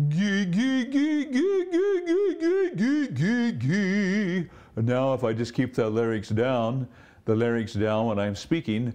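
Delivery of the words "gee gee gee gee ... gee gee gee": goofy, dopey, very high, very slow drone. Demonstrating the opposite vocal setting, doing the dopey sound. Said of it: "I would do the dopey sound".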